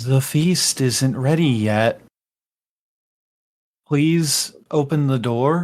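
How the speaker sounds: spirit voice speaking in a hushed whisper. Narrating a scene to a player, voicing a whispering spirit. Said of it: "And it kind of whispers".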